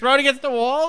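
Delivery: outraged incredulity.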